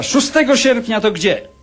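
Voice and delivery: offended reproach in a very high voice. Retelling what a woman said to him, imitating her reproachful tone. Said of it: "z takim wyrzutem powiedziała".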